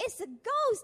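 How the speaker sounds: high, loud, terrified cry of fear.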